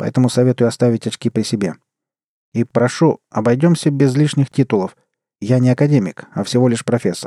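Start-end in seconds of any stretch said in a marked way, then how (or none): none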